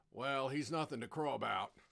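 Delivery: ordinary delivery, nothing marked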